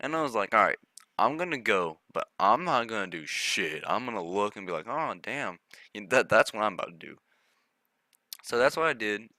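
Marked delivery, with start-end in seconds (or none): none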